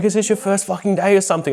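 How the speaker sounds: acted, panicked, freaked-out yell. Retelling the man he was treating yelling at him, retelling a yell. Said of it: "yelling at me".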